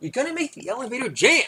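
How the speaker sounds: mock alarmed, very high shriek. Retelling the wife's reaction in the elevator: imitating wife shrieking. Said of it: "My wife shrieks".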